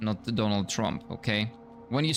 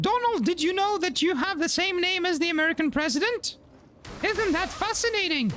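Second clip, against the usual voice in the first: very high, squeaky, cartoonish mouse voice. Trying out cartoon voices, the speaker addresses Donald in a Mickey voice. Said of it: "I guess that's like maybe closer to Mickey".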